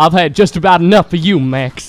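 put-on Southern cartoon-style voice. Imagining a goofy movie plot where the dad scolds Max, Southern Goofy voice. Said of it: "how you're doing a different Southern accent".

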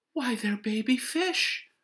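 very high, loud crying-out voice. A mother looking into her son's fishbowl, exclaiming. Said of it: "Mrs. Huggins exclaimed".

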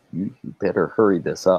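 fast stage half-whisper. Warning a companion to hurry while someone approaches: half-whisper. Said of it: "I'm gonna kinda whisper over".

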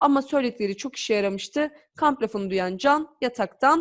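plain reading voice

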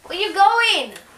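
high, loud yelled call. Blindfolded, asking the other speaker where they're going, yelling. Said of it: "Stop yelling".

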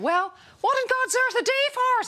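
put-on Irish accent, pitched very high. Telling a joke, voicing the attendant's question in an irish accent. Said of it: "Shall I do the Irish accent?".

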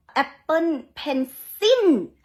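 exaggerated heavy stress on "Apple" and "Pencil". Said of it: "อ๋อแบบนี้เลยมึงอ๋อ, ... แบบพูดเน้นมากๆ".

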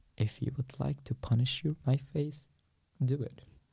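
close, private stage half-whisper. Retelling words once said to a younger prisoner: retelling a half-whisper. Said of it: "I just whispered to him".

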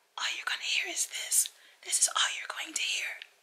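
weak, unstrained, breathy near-whisper. Speaker showing how their voice sounds when not straining, sounds like a whisper. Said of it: "it sounds like a whisper, but it's not".

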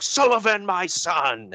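booming, bellowing call. Retelling a story where a voice calls down from above, retelling a big bellowing voice. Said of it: "they just hear this big bellowing voice".

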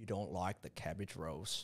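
very low, very soft, hushed put-on Australian accent. Replying to another speaker about cabbage rolls, in a put-on aussie accent. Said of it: "I don't know why I did the Aussie accent".

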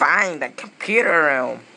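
put-on crocodile character voice. Comparing voices for one character, doing a Vector the Crocodile voice. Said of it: "the dreaded Vector the Crocodile".

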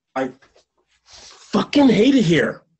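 very high, shrill, drawn-out, seething furious outburst. Telling a friend who asks to talk: angry. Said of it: "I wanna be angry".

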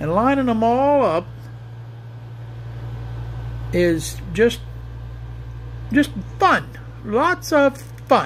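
heavy, obvious, thorough sarcasm. Gluing small inside pieces, the speaker comments on lining them up, very sarcastic. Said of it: "I'm saying that very sarcastically".

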